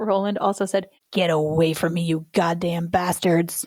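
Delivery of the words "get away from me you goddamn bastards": creepy, eerie, haunted and unsettling voice. Retelling what a possessed boy said: creepy voice. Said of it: "That's a creepy voice too".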